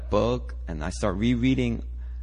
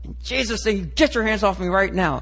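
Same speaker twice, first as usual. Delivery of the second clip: play-acted forceful commanding shout, loud and high-pitched; 9 semitones higher, 5 dB louder than usual. Recounting being paralyzed and unable to talk, retelling a shout. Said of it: "and I'm like shouting".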